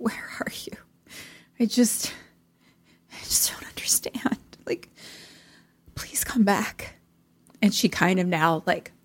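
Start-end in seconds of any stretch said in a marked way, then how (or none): 0.0-7.0 weeping, breathy, soft, tearful pleading. Retelling a scene in which a character calls for someone: imitating someone crying. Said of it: "and she's kind of crying".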